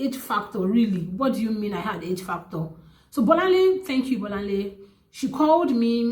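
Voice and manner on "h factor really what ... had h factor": ordinary talk, nothing marked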